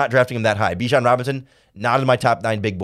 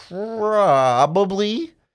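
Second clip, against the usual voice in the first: "probably" stretched long, drawn way out; 8 semitones higher than usual. Discussing drafting a player to play tackle, drawn-out 'probably'. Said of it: "the way I lengthened that word probably and the tone in my voice".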